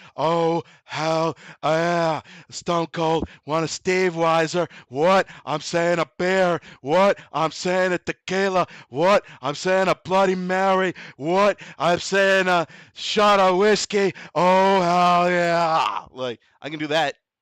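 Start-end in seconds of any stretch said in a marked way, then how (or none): 0.2-16.1 loud, slow, drawn-out bellow. Doing impressions for others: Stone Cold Steve Austin impression. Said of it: "I can do Stone Cold Steve Austin".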